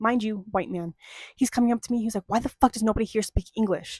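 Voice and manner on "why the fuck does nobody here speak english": put-on seething, furious, angry outburst. Retelling what an angry customer said: imitating a seething angry man. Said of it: "He's seething".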